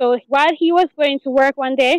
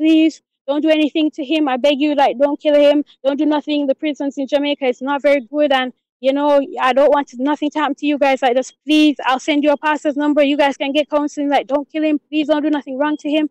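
repeated, put-on pleading, begging voice. Retelling how the lady begged not to kill him: imitating someone begging. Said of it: "the lady's, like, begging me".

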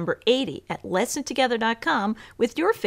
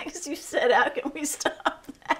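laughing through words, higher and quieter; 4 semitones higher, 4 dB quieter than usual. Explaining why the take keeps breaking, giggling while talking. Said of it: "why are you so giggly?".

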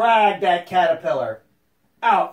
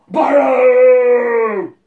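loud booming croaking frog voice, much higher; 5 semitones higher, 7 dB louder than usual. Narrator voicing the frog calling into the hollow log, loud croaking frog voice. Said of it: "The frog went up to the hollow log. He puffed out his throat and made his voice very loud, and he croaked, ... He puffed out his throat and made his voice very loud, and he croaked".

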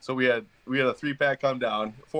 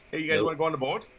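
put-on Minnesota accent, for laughs; 4 semitones higher than usual. Joking about visiting minnesota: joking minnesota accent. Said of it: "I don't got an accent".

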